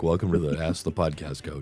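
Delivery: low-pitched voice. Showing how the voice usually sounds: usual voice way down low. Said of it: "usually it's way down here".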